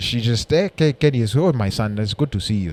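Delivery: strong, imitated East African accent. Talking about their mom, the speaker imitates her strong Ugandan accent. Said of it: "My mom has that accent is strong".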